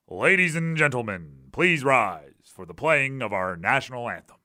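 deep put-on stadium public-address announcer voice. Former PA announcer shows the voice he used, in a put-on PA announcer voice. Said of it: "I 100% put on a a voice".

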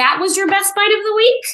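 surprised voice, pitched very high. Reacting to the co-host's best bite of the week, sounding surprised. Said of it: "Why do you sound surprised?".

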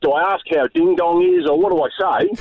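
plain

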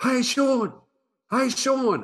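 high, loud yelling.

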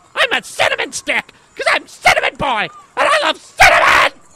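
high-pitched, mild yell. Playing a costumed kid saying what he's dressed as: yelling. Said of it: "Stop yelling!".

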